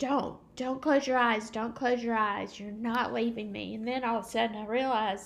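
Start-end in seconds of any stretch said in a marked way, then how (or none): 0.0-3.7 put-on, acted-out screaming. Recalling running for a phone while screaming at him, retelling their own screaming. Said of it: "screaming at him going".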